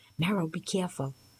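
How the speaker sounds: plain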